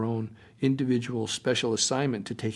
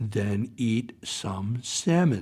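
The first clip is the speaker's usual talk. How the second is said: very slow, drawn out, every word spaced. Retelling a woman's words after she pulled the speaker close, very slowly. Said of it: "said very slowly".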